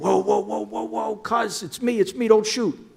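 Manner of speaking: put-on very high, frantic, pleading shriek. Retelling a cousin who thought he'd be shot: imitating someone screaming in panic. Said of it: "he screamed".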